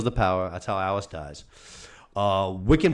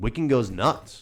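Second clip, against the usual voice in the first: ordinary delivery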